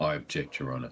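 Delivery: menacing deep put-on voice. Playing a king's counsel for the prosecution, objecting in a deeper, sinister voice. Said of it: "you sound more sinister in general".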